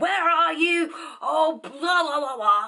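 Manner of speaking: toned-down, half-screamed, mild yelling tone. Retelling a woman on the phone screaming at the one who answered, retelling a woman screaming. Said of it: "this woman like screaming at her like".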